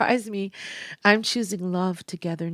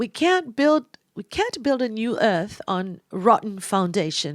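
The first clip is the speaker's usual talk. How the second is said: put-on English accent, a bit unsure; 3 semitones higher, 3 dB louder than usual. Quoting an astrologist, speaker tries an English accent. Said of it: "I'm trying an English accent".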